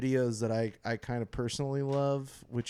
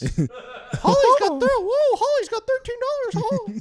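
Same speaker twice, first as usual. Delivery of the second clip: high cartoon mouse voice; 8 dB louder than usual. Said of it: "I don't know why I sound like Mickey Mouse".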